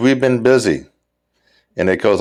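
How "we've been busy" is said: put-on curt, irritated, sharp, angry tone. Retelling his reply to a complaint about lead pipes never sent, imitating a sharp, angry tone. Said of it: "with a kind of a sharp and angry tone".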